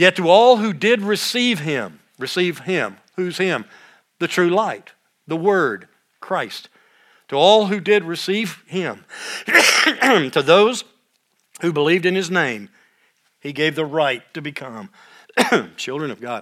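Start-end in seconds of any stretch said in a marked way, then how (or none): 7.3-16.4 choked-up voice, emotion catching in the throat. Reading scripture aloud and talking about Jesus, getting choked up. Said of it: "I'm really getting choked up by this".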